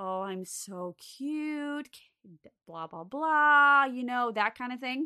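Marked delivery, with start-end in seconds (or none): 0.0-1.9 put-on sweet, mellow, calming, soft, slow old lady voice. Recounting calling a woman's name, the speaker mimics a little old lady's sweet, mellow voice. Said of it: "had like a very sweet, mellow, calming voice".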